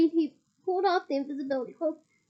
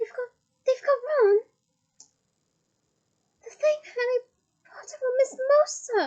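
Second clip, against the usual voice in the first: squeaky, high-pitched elf voice; 8 semitones higher than usual. Reading a novel aloud, voicing the elf's line: squeaky Dobby voice. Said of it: "squeaked Dobby".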